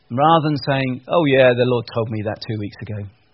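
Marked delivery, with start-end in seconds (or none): none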